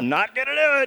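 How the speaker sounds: shrill, very high, very loud belted put-on voice. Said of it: "Was that a George Bush impression".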